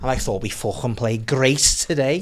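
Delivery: put-on Scouse accent, Liverpool English.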